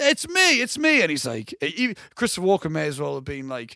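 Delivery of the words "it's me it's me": very slow, drawn out and very high pitched. Retelling a film scene where De Niro pleads with his friend. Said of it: "I'm doing a bad impression".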